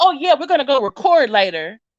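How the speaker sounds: mock rushed, fast speech. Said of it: "but she's still talking fast".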